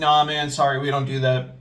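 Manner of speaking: put-on dismissive voice. Retelling how the general manager turned down a man asking for money, imitating a dismissive manager. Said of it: "My general manager is real dismissive".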